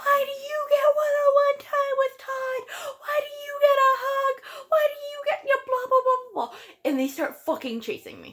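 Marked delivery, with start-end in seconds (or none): 0.0-6.6 play-acted, very high, shrill accusing screaming barrage. Retelling how the girls chased the speaker: imitating girls screaming. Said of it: "they just start screaming at me".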